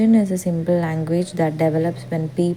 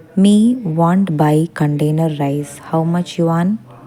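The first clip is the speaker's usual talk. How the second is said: loud pidgin English with bare-bones grammar; 6 dB louder than usual. Showing how a speaker talks to a chinese business partner: simple broken english. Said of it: "I will be speaking like this".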